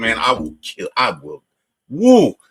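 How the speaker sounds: put-on menacing dad voice, slow, swooping, drawn out. Retelling own past threats as an overprotective dad: imitating own past threats as overprotective dad. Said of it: "I was exactly that asshole dad that was like".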